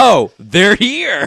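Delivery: mock excessive glee, loud and high. Retelling a movie scene in which Kurt Russell is too cheerful: imitating Kurt Russell's mock glee. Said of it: "with way too much glee".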